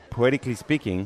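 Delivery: normal talking voice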